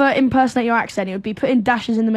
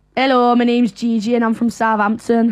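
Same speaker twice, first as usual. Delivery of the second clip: northern English accent, northern UK. Demonstrating accents to the other speaker, saying a sample sentence in a northern english accent. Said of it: "I'll do the northern accent".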